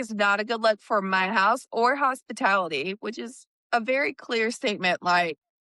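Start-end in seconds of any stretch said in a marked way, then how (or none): none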